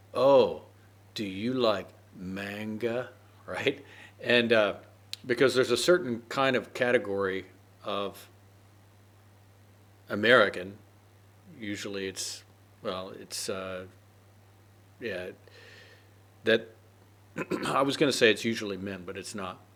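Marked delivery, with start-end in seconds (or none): 0.2-3.1 slow, loud tone dripping with sarcasm. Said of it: "he said in a kind of sarcastic way".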